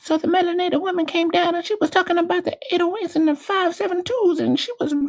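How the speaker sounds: squeaky, very high throughout. Imitating what Intrinsic says, in a squeaky voice imitating Intrinsic. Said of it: "but in a squeaky voice".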